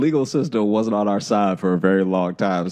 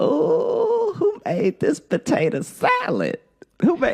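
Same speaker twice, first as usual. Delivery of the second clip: acted very high, swooping, thrilled grandma delight. Retelling how grandma asked about the potato salad: imitating grandma sounding excited. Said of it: "and she sounded excited".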